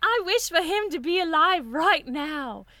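mock crazy British lady voice. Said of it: "I love doing a crazy British lady".

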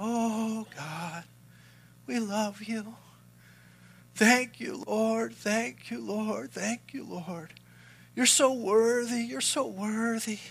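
gentle, soft, slow, almost whimsical murmur. Speaker imitates people kneeling down to pray, imitating a soft whimsical prayer. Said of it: "it'd be just this real soft".

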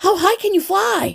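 thrilled, very high, eager excited voice. Martin, wishing he were going on the trip himself, asks Jeremy, excited. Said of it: "asked Jeremy in excitement".

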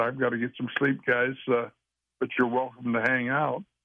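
usual speaking voice

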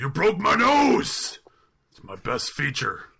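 big sing-song character voice, high, loud, swooping. Reading out a quote of the week in the Mick voice. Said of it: "the Mick voice headspace".

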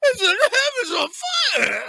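mock, very high, loud, winded, breathless drunk holler. Imitating Paul's line from the recording: imitating Paul drunk and out of breath. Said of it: "he sounds like he's drunk and out of breath".

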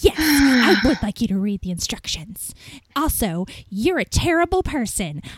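imitated angry woman voice. Speaker retells a woman accusing them of sarcasm, mock-angry woman. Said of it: "it was just ridiculous how angry she got".

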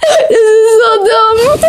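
high, slow, helpless laughter while speaking.

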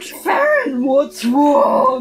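warped, distorted, dropped-down deep voice. Storyteller voicing her as she speaks to Farron, in a distorted, deep voice. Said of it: "it's like this distorted, deep voice".

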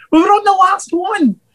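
high, pleading, mock encouraging tone.

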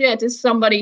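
ordinary talk, nothing marked

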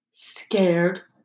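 mumbled, muttered under the breath. One student speaks to another so the professor can't hear, muttered. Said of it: "muttered Malfoy".

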